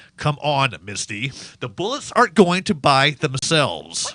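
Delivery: strict, stern, no-nonsense tone. In a comedy scene walking briskly to buy bullets, a character urges Misty on in a stern voice. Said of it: "I'm speaking in a stern voice".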